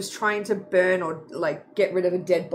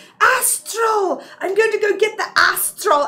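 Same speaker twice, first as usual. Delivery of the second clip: slow, yelled, put-on French accent; 12 semitones higher, 6 dB louder than usual. Retelling a French game character in a battle, imitating a yelled French accent. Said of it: "sitting there yelling out".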